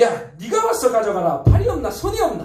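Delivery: irritated, snapping delivery.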